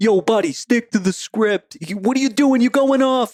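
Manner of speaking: very high mafia tough-guy voice. Retelling a guy on a sales floor scolding cold callers: imitating a mafia guy. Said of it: "this big mafia guy walking around".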